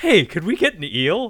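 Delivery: very loud, high-pitched, eager blurted delivery. Retelling a film scene, quoting Withnail asking for an eel: imitating Withnail as a bright-eyed kid. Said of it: "run up to him like a bright-eyed kid".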